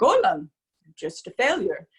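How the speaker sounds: put-on Polish accent. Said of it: "he has a very thick Polish accent".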